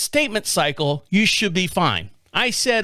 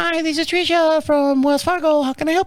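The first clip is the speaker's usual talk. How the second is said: put-on high little-girl voice; 8 semitones higher than usual. Retelling a phone call, acting out the person who answered, in a little girl voice. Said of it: "I don't know why she's got that accent".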